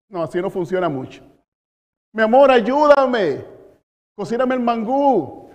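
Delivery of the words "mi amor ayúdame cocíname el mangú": begging with real desperation, pleading. Showing how begging sounds, asking his wife to cook: desperate pleading. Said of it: "Y le estoy rogando, o sea, el ruego tiene voz, voz, y es desesperada".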